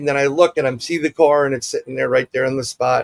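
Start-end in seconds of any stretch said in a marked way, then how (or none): none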